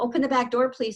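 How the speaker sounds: ordinary delivery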